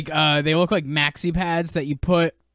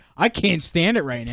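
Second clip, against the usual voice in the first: ordinary talk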